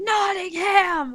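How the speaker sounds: full-throated, top-of-the-lungs yell, pitched high. Calling out a name in a game: yelling at the top of lungs. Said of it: "yell at the top of my lungs".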